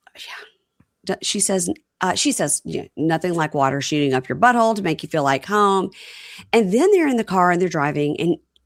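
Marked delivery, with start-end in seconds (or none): none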